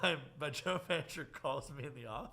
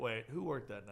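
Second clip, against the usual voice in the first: ordinary talk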